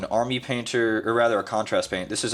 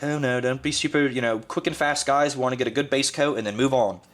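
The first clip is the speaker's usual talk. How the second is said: put-on British accent, higher pitch; 4 semitones higher than usual. Imitating a painting tutorial guy explaining a step: British accent. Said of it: "with an accent because they're always British".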